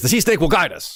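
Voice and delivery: brusque, short, hurried, terse delivery. Retelling a character's line in a show, imitating a quick, terse line. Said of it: "she says it kind of quickly and tersely".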